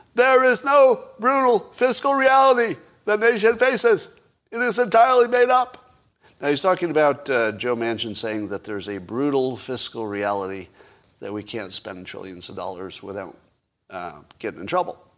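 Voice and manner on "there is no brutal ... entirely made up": every word shrill, very high shouting. Reading a tweet aloud the way all caps must be read, reading an all-caps tweet. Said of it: "so I have to read it like that".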